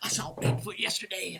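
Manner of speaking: put-on southern accent. Imitating a crazy uncle at Thanksgiving: southernish crazy uncle accent. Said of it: "a southernish accent".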